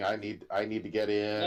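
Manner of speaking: ordinary talk, nothing marked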